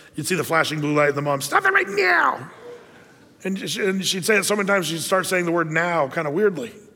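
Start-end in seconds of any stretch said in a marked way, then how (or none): 1.4-2.5 very high, creaky scolding voice. Retelling a mom scolding her child in Kmart: imitating a scolding mom. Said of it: "The Kmart mom".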